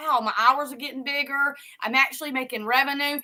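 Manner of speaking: ordinary talk, nothing marked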